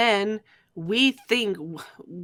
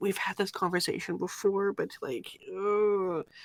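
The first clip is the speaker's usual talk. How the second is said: soft muttering under the breath, drawn-out "ugh"; 7 dB quieter than usual. Retelling what she says about the conversation, imitating her muttering under breath. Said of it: "she mutters under her breath".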